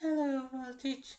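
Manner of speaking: failed attempt at a cartoon pony voice. Voice acting live, the speaker tries the Fluttershy voice again. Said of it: "Let's try Fluttershy's voice again".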